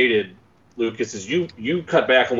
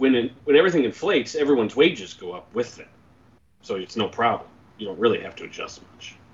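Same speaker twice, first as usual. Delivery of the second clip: dry, straight-faced, dead-straight delivery. Speaker makes a joke during a group discussion, deadpan. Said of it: "you got a really deadpan".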